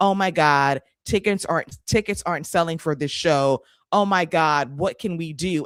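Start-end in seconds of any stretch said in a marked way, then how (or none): none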